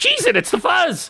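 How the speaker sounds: very high-pitched tiny little dragon creature voice. Game master voices a creature replying in Draconic before it flies off: very high voice. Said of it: "a very a very high voice comes back to you in Draconic".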